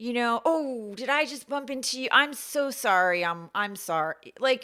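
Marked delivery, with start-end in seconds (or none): 0.5-4.3 mock, profuse over-apologetic voice, higher. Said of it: "walking into Whole Foods".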